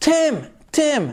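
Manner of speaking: high, loud calling yell.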